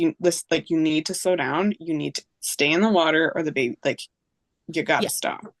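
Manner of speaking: ordinary talk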